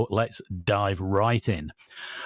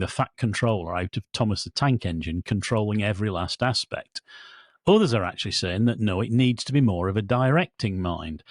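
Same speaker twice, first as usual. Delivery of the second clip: normal talking voice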